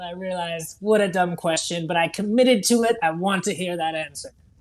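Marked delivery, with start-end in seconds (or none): none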